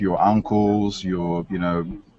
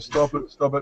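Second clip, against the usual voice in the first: high-pitched, cowering, begging plea; 7 semitones higher than usual. Retelling being beaten on the ground, imitating own cowering plea. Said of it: "like a cowering, going like".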